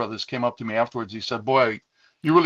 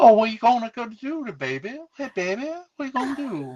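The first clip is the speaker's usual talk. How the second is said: put-on Southern accent, very high pitch; 11 semitones higher than usual. Recalling the makeup girl they dated, who called them baby: imitating a southern accent. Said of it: "southern accent".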